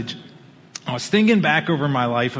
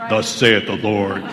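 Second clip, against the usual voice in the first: booming, deep, resounding voice from the chest; 6 semitones lower, 4 dB louder than usual. Quoting scripture in a booming God voice. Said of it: "it's like my God voice".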